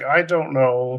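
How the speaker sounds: acted, halting, uncertain, hesitant speech. Retelling a scene where Mark is reluctant to leave: imitating a hesitant character. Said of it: "He's very hesitant".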